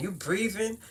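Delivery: Brooklyn way of talking. Showing how people in Brooklyn say the word: Brooklyn accent. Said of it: "That's how we talk in Brooklyn".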